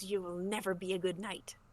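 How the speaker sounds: fast, pained hiss. A game master voicing a wounded monster taunting a player's knight, hissing in pain. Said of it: "He hisses in pain and goes".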